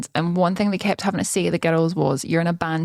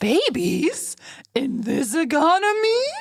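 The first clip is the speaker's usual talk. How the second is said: put-on very high, swooping baby talk; 10 semitones higher than usual. Trying another read of the line: baby-talk voice. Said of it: "Sounded like you were talking to a baby with that voice there".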